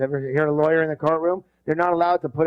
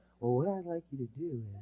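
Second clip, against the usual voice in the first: mock quiet, soft-spoken voice, much quieter; 2 semitones lower, 14 dB quieter than usual. Describing people who speak quietly, acting one starting a talk, imitating a quiet speaker. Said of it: "People who speak quietly".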